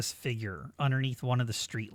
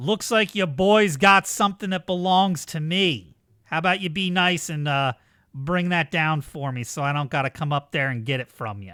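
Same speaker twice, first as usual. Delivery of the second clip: booming, very loud shout; 4 semitones higher, 8 dB louder than usual. Narrating a scene, voicing a man who looks up at you, shouting out. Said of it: "he's gonna shout out".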